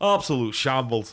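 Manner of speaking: blunt, damning studio pundit-style delivery. Imitating a football pundit reviewing instant replays: Alan Hansen impression. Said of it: "best impersonation I will ever do of Alan Hansen".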